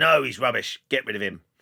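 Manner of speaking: put-on rough-edged, gruff voice with Geordie accent. Recounting a show editor rejecting his show reel; gruff geordie accent. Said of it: "he was a really gruff Geordie".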